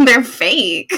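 speaking through laughter. Retelling own reply to a woman's compliment, laughing while quoting self. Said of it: "And I'm just laughing".

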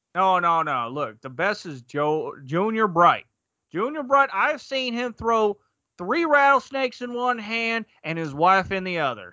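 put-on drawn-out Southern accent. Playing one side of a made-up argument about two men, southern drawl. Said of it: "say that with like a southern draw".

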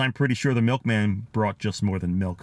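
ordinary delivery

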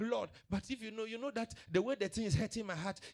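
very high, tearful, put-on complaining whine. Acting out a believer complaining to god: mock crying complaint. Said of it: "I don't do crying. I don't do complaining".

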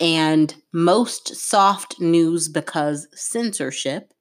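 very slow, drawn-out, word-by-word delivery. Saying it slowly so listeners can work out who is meant, speaking slowly. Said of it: "I'm going to say it slowly".

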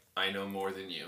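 completely deadpan, straight-faced delivery. Retelling a character's reply to a sales guy: deadpan Ron Swanson delivery. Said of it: "in a straight face".

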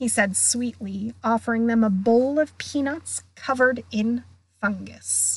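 ordinary delivery

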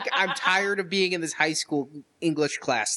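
ordinary talk, nothing marked

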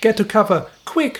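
urgent high shout. He warns the animals not yet safe in the town hall, shouting. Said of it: "he shouted".

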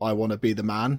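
normal talking voice

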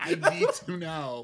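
put-on very loud, high-pitched, slow, belted American accent. Imitating Sharon Osbourne demanding to be shown the racism: Sharon Osbourne impression in American accent. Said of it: "Why are we giving Sharon Osbourne an American accent?".

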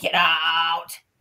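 put-on yelling grumpy old man voice. Speaker retelling a man yelling at a spirit box, screaming in grumpy old man voice. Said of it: "He was like screaming over the SB7".

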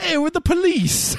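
very high, slow, drawn-out put-on Bronx accent. Retelling a phone call from a charity caller in a Bronx accent. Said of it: "straight from the Bronx".

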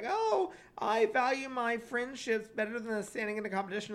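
put-on sobbing, overdone and phony, teary crying voice. Criticizing a contestant who threw a fit on stage; mocking someone fake crying. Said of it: "She's like crying".

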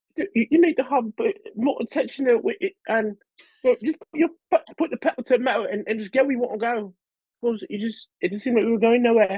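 put-on very high British accent, pitched way up. Imitating an ex-girlfriend's British accent while quoting what she would say. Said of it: "she had a British accent".

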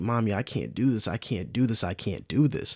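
mock crying out through sobs, pleading. Retelling what he said to his mommy while crying, imitating someone crying. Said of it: "He was just crying like".

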